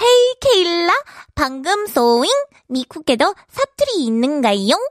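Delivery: cutesy aegyo voice. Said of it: "애교스럽게".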